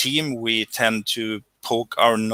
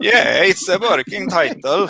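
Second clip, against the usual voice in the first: put-on raised, pitched-up, very strong Swedish accent; 7 semitones higher, 6 dB louder than usual. Noticing how he just sounded, the speaker repeats his own words in a very Swedish accent. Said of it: "I sounded very Swedish when I said that".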